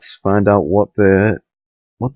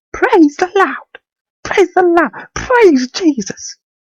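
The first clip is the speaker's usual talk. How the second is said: mock church-style praise shouting, higher pitch.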